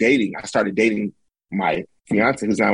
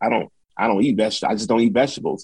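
ordinary talk

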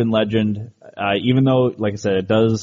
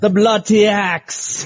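clumsy, bad English accent, very high pitch; 11 semitones higher, 3 dB louder than usual. Saying a phrase for English listeners in a bad English accent. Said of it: "I don't do the best English accent".

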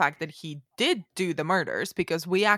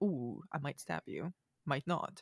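acted, very soft, hushed, menacing taunting murmur; 3 semitones lower, 12 dB quieter than usual. Imitating a TV character early in the series: imitating a smirking psychopath.

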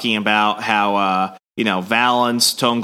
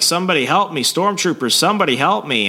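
mock scream, higher and faster; 7 semitones higher than usual. Summarizing a story where a rat monster kidnaps children, imitating a scream for help. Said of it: "she's screaming".

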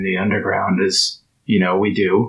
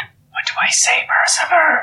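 slow, loud stage whisper, loud enough to carry. A character in a padded room asks his companion what to say, loud whisper. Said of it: "He says really loud in a whisper".

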